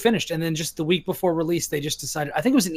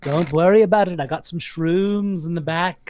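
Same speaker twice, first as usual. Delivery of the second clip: put-on Liverpool accent. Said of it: "you sound more like [name]".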